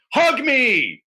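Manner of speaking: very high, all-out yell at top of voice. Retelling jumping off the couch and yelling at a roommate: retelling own yell at top of voice. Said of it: "at the top of my voice yelling".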